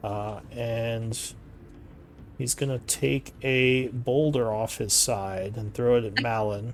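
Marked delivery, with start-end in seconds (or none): none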